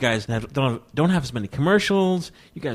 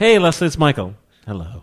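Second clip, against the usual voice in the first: put-on deadpan, flat delivery; 5 dB louder than usual. Retelling how he opens a phone call to Leslie, in mock deadpan. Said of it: "it's like deadpan".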